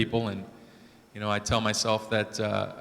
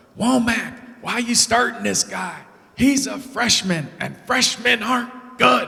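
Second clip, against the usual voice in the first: very high, shrill, loud hollering jeer; 12 semitones higher, 5 dB louder than usual. Recalling a man heckling from the small crowd while the speaker pitched, retelling a heckler's yell. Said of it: "he's just yelling".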